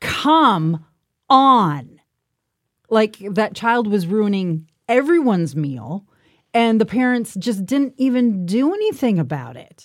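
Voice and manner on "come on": very loud, booming outburst. Speaker retells an adult in a restaurant reacting to a disruptive child: loud exclamation. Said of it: "he says very loudly for the entire restaurant to hear".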